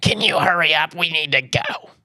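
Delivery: high-pitched, drawn-out calling voice. Retelling being rushed out of the shower: imitating his mom. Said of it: "that's my impersonation of my mom".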